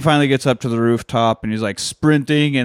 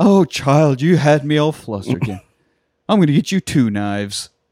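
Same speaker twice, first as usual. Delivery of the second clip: mock-wholesome man voice, higher pitch; 3 semitones higher than usual. Speaker recapping a scene, quoting him to the 12-year-old, imitating a wholesome-sounding man. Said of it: "very wholesome sounding".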